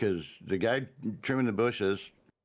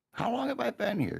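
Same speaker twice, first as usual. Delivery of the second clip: put-on scream, higher. Retelling how a character screamed at her partner: imitating someone screaming. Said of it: "she was screaming at him".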